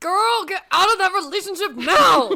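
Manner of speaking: shrill, very loud, high-pitched all-out shout. Discussing a character in a story, the speaker finally lets it out, yelling. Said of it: "just want to yell out really badly".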